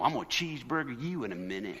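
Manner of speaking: put-on Alabama accent. Retelling how a father scolded his son: imitating dad from Alabama. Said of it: "He'd go".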